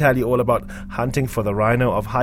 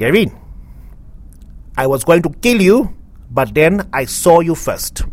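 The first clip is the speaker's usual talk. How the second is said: put-on Portuguese accent, pitched up; 5 semitones higher, 4 dB louder than usual. Retelling the exact words she said to him last night, Maria Wilson's fake Portuguese accent. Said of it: "in her fake Portuguese accent".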